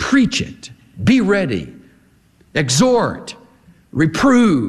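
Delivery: staccato, short punched exclamations, falling ends, pauses between. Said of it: "They come with a staccato exclamation point".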